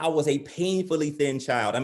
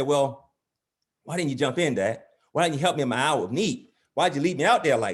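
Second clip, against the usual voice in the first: plain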